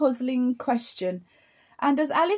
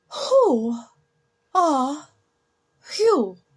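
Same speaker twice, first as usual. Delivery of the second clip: drowsy, lazy, languid sleepy drawl; 4 dB louder than usual. Narrating, the caterpillar finally addresses Alice: Caterpillar's languid, sleepy voice. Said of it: "addressed her in a languid, sleepy voice".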